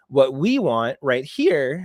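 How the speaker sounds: voice cracking. Walking viewers through setup instructions, voice cracking. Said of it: "voice just cracked".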